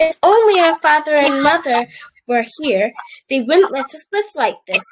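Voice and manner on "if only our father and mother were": usual speaking voice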